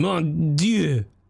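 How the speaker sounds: mock French accent with a falling end. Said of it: "How are you rating the French accents".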